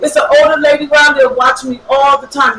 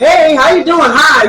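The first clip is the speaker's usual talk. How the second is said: acted, rude, jokey sarcasm, slow and drawn-out. Retelling how a stranger greeted her: imitating a rude sarcastic greeting. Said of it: "like in a rude, funny way, being sarcastic".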